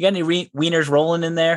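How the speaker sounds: high, dead-serious tone.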